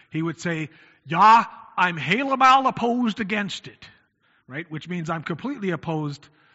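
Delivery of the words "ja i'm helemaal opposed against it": loud, high, raised, mocking Dutch accent, laid on. Quoting an uncle's phrase mocking Dutch churchgoers, mock Dutch accent. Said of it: "use a phrase mockingly of the Dutch folk".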